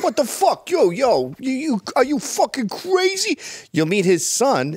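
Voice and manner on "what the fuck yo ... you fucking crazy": put-on New York accent, much higher. Describing a type of guy to friends while doing a New York accent impression. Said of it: "New York accent".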